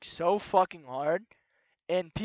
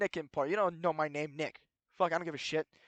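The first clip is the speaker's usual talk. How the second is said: ordinary talk, nothing marked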